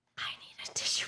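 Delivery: soft, fast, tearful whisper. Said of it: "I hate crying on stream".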